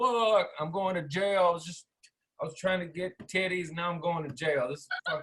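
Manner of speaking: acted tearful, sobbing voice, crying through the words. Retelling sitting handcuffed by the police car: imitating own crying. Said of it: "I'm crying".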